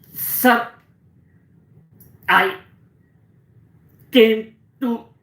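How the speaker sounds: loud stutter on each word, very drawn out. Showing how some patients talk: demonstrating loud stammering on every word. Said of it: "every word they start stammering".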